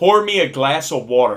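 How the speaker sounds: brash, obnoxious loudness. Retelling a kid's request during a movie: imitating an obnoxiously loud voice. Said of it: "obnoxiously loud".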